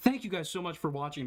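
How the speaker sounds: polite on the surface, passively threatening underneath. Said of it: "very passively threatening".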